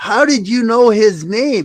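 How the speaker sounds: high, loud, slow, shocked Southern-accented voice.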